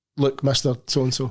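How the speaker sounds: ordinary talk, nothing marked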